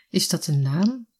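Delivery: plain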